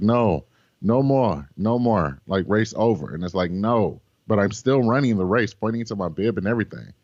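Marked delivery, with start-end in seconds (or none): 0.0-3.1 put-on slow, heavy German accent, laid on thick. A runner retells a man's reply during the race, in a thick german accent. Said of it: "very thick German accent is like".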